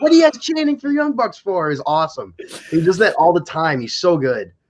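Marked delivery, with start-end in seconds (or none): 0.0-1.7 put-on angry shouting. Retelling how Jericho got mad at the crowd: imitating Jericho getting mad. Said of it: "He's getting mad".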